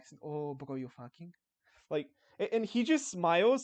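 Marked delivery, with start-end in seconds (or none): 0.2-1.3 slimy put-on Mexican accent, lower and quieter. Retelling his own reaction on seeing a guy with his girlfriend, in the slimiest Mexican accent. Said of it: "the slimiest fucking Mexican accent".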